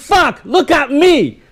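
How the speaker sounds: very high, very slow, loud, shrill shocked call. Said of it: "But when you're loud".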